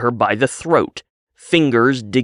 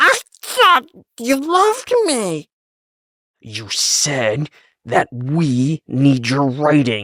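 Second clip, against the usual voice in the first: put-on very high wheezing voice; 2 semitones higher than usual. A narrator reads Belle speaking to Jerry, wheezing. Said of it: "She wheezed".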